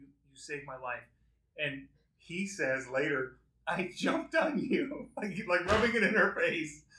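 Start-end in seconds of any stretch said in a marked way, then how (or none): 0.0-1.0 put-on tearful choking, quieter and faster. Recapping a show where a wife thanks her husband, imitating choking through tears. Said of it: "through tears, choking".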